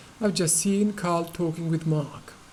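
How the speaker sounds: British pronunciation throughout. Showing how a British speaker would pronounce a sentence, in British accent. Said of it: "So that's how uh, a British would pronounce it".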